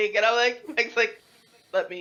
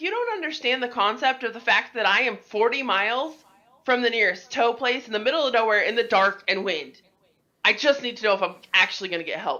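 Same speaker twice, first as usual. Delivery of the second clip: plain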